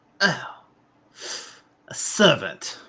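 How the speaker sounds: whispered, breathy, fanged vampire snarl. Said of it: "when he snarls at you".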